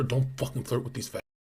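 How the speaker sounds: hushed whisper under the breath. Retelling leaving a party while imitating own whisper. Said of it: "I used to always whisper".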